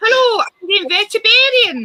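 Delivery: loud, very high put-on Scottish accent. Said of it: "say something in a Scottish accent".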